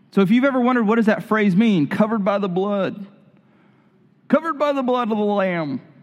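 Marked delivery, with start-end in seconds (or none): 1.9-5.8 odd, strange, put-on old-person voice. Explaining a phrase to listeners, the speaker slips into a weird old voice. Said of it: "I'm going into some weird old voice".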